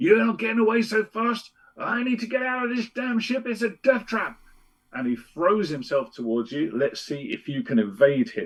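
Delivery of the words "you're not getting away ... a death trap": very high, shrill yelling. Game master voicing Grudge chasing the players out of a cell: Grudge shouting at you. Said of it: "And he shouts at you".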